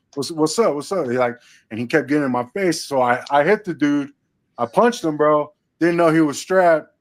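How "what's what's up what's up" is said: normal talking voice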